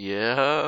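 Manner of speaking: put-on slurred drunk yeah, high and drawn out. Retelling a moment when someone called him over: imitating own drunk voice. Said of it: "in my drunk voice".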